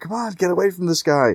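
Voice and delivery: very high, urgent, loud yell. Speaker retelling how the man in the truck yelled at his driver, retelling a yell. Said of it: "he's yelling at his driver".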